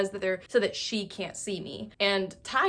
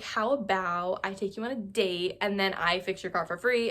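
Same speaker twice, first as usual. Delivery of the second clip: ordinary talk, nothing marked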